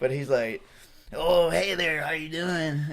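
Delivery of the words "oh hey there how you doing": slow, drawn-out, easy come-on tone. Retelling a stranger approaching in a restaurant: imitating a stranger's voice. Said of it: "I'm gonna try to imitate his voice".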